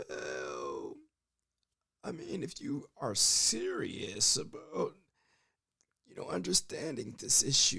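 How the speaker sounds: cool, relaxed delivery with swooping pitch. Describing a calm, raspy-voiced public figure, doing a bad RFK impression. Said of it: "that was a bad impression".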